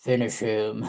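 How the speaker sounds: fighting-game announcer voiceover style. Joking about a botched surgery: Mortal Kombat voiceover. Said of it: "Mortal Kombat voiceover".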